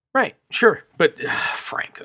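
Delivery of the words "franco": utterly disgusted near-whisper. Saying an actor's name again with utter disgust. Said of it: "Just the utter disgust".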